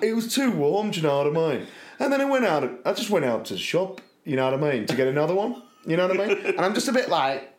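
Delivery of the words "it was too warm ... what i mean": chatty, rambling, filler-heavy delivery. Doing an impression of Kim's uncle for a listener: imitating Kim's uncle. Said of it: "And he's just like".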